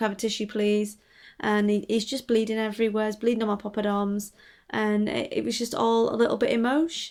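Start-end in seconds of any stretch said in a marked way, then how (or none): 0.0-1.0 offhand, casual, unbothered, nonchalant tone. Retelling asking the guy for a tissue: imitating a nonchalant request. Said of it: "I nonchalantly turn to the guy and I'm like".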